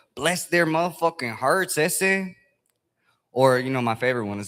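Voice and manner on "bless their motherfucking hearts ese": put-on Southern accent with Spanish-tinged street sound, pitched up. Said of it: "cholos that have Southern accents".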